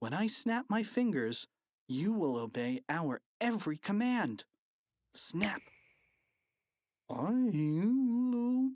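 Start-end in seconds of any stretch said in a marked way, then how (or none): 7.1-8.7 dazed, high trance mumble, "I'll" stretched out. Reading a spellbound man's reply to a command: mumbled in a trance. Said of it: "mumbled Mr".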